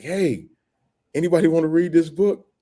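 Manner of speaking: put-on, high-pitched hollering yell. Recalling yelling under the cell door about a first book, retelling own yell. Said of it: "I literally yelled under the door".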